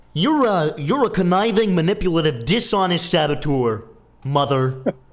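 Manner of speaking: mocking put-on voice. Imitating the man from the clip talking to his mom: mocking imitation of the man. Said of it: "And then he's like".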